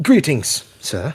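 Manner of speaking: courtly, polite, well-mannered voice. As Peter, walking up and bowing to greet a man: polite greeting.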